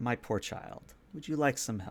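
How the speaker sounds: whispering voice. Narrator voicing a comforting presence behind a player, whispering in the ear. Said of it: "She whispers in your ear".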